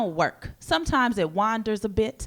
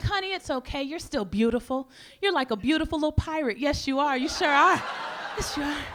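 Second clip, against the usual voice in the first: soothing, reassuring, comforting motherly voice, pitched up; 5 semitones higher than usual. Retelling how the mother comforted the speaker: imitating a comforting mother. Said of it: "She was like".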